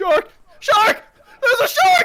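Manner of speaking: frantic, shrill, rushed panic screams, very high, very loud. A narrator voices the man tied to the rock spotting a shark: panicked screaming. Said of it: "stop screaming".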